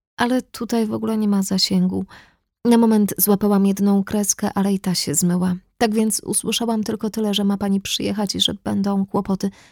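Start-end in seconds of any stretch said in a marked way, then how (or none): none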